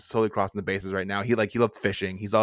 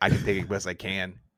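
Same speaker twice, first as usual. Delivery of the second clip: normal talking voice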